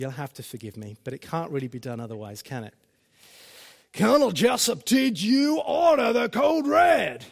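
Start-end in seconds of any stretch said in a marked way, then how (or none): 3.9-7.1 put-on American accent, slow and shouted. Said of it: "I might have to try an accent".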